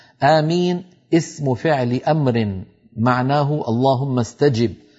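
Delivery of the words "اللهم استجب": ordinary talk, nothing marked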